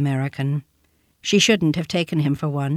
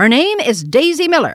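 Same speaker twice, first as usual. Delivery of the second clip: put-on high, loud crying-out child voice; 7 semitones higher, 5 dB louder than usual. The child cuts in as Winterbourne asks the young lady, crying out. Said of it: "cried the child".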